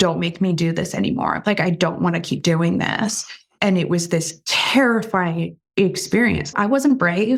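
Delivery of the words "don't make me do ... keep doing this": put-on tearful, crying voice. Retelling what was said to dad while crying: retelling a tearful plea. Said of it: "I just remember crying and saying to my dad".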